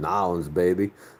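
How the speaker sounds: imitated twang accent. A northerner imitates how locals say it, imitating a twang accent. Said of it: "They say baby every time".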